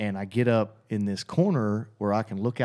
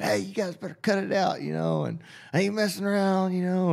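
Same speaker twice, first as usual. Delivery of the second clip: put-on, terrified, very high shouted yell; 9 semitones higher than usual. Frozen in bed, the speaker retells yelling at some guys to cut it out, retelling a scared yell. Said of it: "you can hear it in my voice, you know, I'm scared to death".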